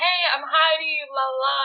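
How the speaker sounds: way too eager, full of energy, drawn out. Retelling meeting a coworker finishing a shift: imitating own past hyper excitement. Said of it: "I was hyper excited".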